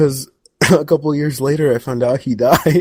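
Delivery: talking through laughter. Telling a story to another speaker, laughing while talking. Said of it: "Why are you laughing?".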